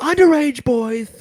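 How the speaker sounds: sudden shrieked outburst, very high and shrill. Speaker in the middle of a story, yelling. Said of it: "Sorry, I yell that part every time".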